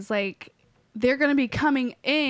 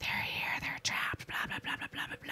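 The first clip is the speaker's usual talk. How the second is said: soft, breathless, creepy ghostly whisper. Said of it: "there's all the whispering".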